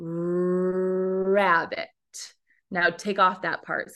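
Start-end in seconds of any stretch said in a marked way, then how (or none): 0.0-1.9 rabbit, said very slowly, sound by sound. Showing how to say the word rabbit really slowly: drawn-out slow rabbit. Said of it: "let's say the word rabbit really slowly".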